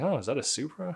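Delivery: hushed mutter under the breath. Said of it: "under my breath".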